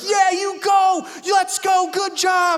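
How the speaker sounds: shrill, booming shout, high and long-drawn-out. A parent recalls a daughter's award being called, retelling a shout. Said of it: "And I'm shouting it out".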